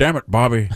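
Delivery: cartoon voice with a lean Scottish accent. Quoting a favourite King of the Hill line: Hank Hill impression. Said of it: "Your King of the Hill is like Hank Hill and Sean Connery".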